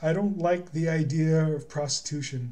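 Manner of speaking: ordinary talk, nothing marked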